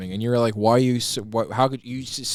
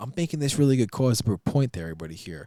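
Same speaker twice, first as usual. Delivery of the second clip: mock earnest, serious, smart-sounding know-it-all lecture voice. Retelling how their tone shifted while making a point: imitating own serious know-it-all tone. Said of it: "My tone shifted where it's like".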